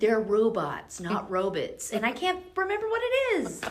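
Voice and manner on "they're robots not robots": put-on slow, teenage-sounding tone. Retelling a show where a teenager corrects a dad: imitating a teenager correcting. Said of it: "the teenager was like".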